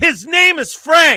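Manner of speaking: high, loud yell.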